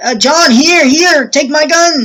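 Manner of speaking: loud yelling, high and slow.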